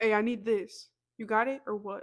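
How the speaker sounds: loud, direct, assertive voice. Retelling how they ask for things at work: imitating own loud assertive voice. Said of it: "it's gonna be loud".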